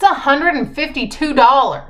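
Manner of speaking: sudden, loud, high-pitched yelled outburst. Naming the full price of a serum she loves: yelling. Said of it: "Sorry, that's really loud. I didn't mean to yell at you".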